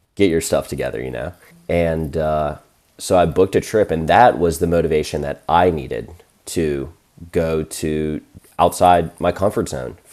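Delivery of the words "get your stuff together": unkind, not kind tone. Retelling what an older sister said to him: imitating an unkind older sister. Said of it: "an older sister".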